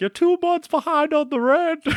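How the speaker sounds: very high, shrill, screaming voice. Describing a scene where the landlady confronts your character at the door, mock-screaming landlady. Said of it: "she like screams at you".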